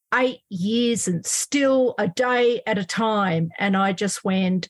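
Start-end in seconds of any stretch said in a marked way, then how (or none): 0.1-3.5 mock hammering, angry, bitter insistence. Retelling what a woman said while thumping the table: imitating an angry woman. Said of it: "she was thumping the table saying".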